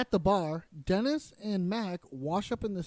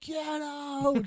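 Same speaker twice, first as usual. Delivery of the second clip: mock yelling, high and sharp; 7 semitones higher than usual. Retelling what a woman in a video does, imitating someone yelling. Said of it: "then she just yells".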